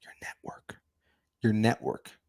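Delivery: quiet whispered voice. Repeating a point for the people on YouTube, whispering. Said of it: "I'm whispering for the people on YouTube".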